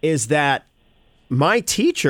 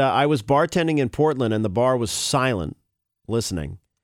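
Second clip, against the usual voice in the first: ordinary delivery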